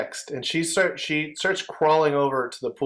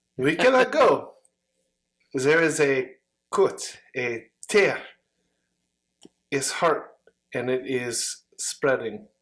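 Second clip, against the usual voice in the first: deliberately bad, fake French accent. Voicing a wounded woman who points to a red scar, horrible french accent. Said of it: "my horrible French accent".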